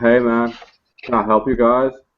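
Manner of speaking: stoned, spaced-out counter-guy clerk voice. Narrating a record store scene, the clerk greets the customers, sounding stoned. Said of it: "he looks rather stoned".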